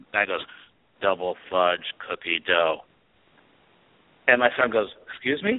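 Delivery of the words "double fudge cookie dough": deep, very low, dead-level flat robotic monotone. Retelling a custard shop employee naming the special to the speaker's son: robot-like voice. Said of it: "And it sounded like a robot".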